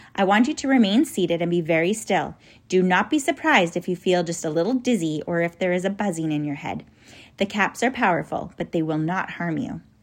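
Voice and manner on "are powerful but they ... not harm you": ordinary delivery, nothing marked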